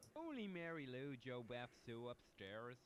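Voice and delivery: put-on Irish brogue. Answering whether any women are around here: fake Irish accent. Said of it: "person with a fake Irish accent".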